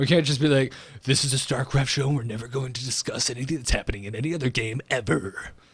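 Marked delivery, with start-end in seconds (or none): 1.0-5.3 epic, dramatic movie-trailer announcer voice. Mocking what a single-game show would say, in a movie trailer voice. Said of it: "Used my trailer voice".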